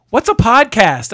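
put-on voice of a woman. Retelling showing her the podcast shirt, imitating how she sounded. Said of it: "this is what she sounded like".

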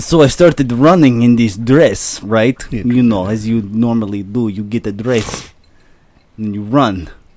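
put-on Russian accent. Reading a dress review as a Russian man: Victor Volkonikov Russian accent. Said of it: "by a Russian man".

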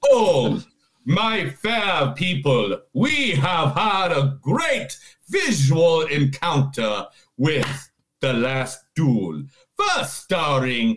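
put-on old-fashioned medieval squire voice. Host opening a film presentation to listeners, mock medieval squire voice. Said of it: "this is the voice I will be doing".

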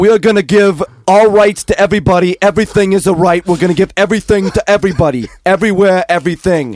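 heated, belted-out Brooklyn accent. Doing an impression when asked: Bernie impression with Brooklyn accent. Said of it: "do Bernie".

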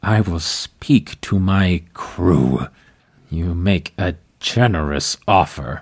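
tense, through gritted teeth. Game narrator voicing the captain answering an offer, through gritted teeth. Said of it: "The captain grits his teeth. He sort of tenses up".

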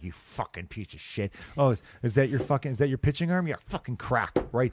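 put-on speech through gritted teeth. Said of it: "grinding my teeth while talking".

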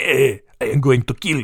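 put-on Italian-sounding accent. Retelling a man threatening kids in a prank video: accent came out italian. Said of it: "Where's my Russian accent? It's Italian".

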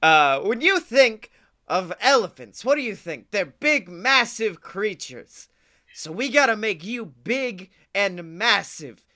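cartoon meerkat character voice. Retelling a scene, the speaker voices Timon talking to Pumbaa: Timon voice. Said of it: "I don't know what this voice is that I'm doing for Timon".

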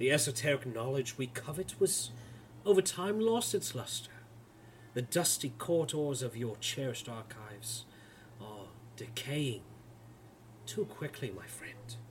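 soft velvety whisper. Game master voicing a lord addressing the players' characters, in a velvet whisper. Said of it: "[name], as you see this not tall, not short, perfectly average build, height, yet seemingly charismatic lord of a man, he approaches you as he begins pacing around the room. ... His voice, a velvet whisper, continues to coat the very room".

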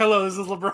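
casual, relaxed conversational tone. Acting out LeBron answering the Lakers phone: imitating LeBron answering phone. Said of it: "it's like".

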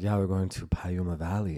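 heavily exaggerated Persian accent, laid on thick. Retelling mom's phone call about a trip, exaggerated Persian accent. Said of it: "I exaggerate her accent".

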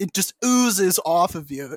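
ordinary delivery

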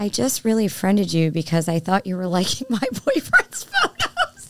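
sugary sweet, sing-song voice. Retelling what a close friend once told the speaker, imitating Millie's sweet voice. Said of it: "in her sweet Millie voice".

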